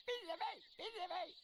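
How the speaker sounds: shrill, very high parrot scream. Narrator reading Silver's parrot screaming out of the darkness: shrill screaming Captain Flint parrot. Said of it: "a shrill voice broke forth out of the darkness, screaming".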